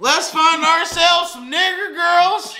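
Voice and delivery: very high, slow, drawling put-on country accent. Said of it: "He probably don't sound like that when he say it".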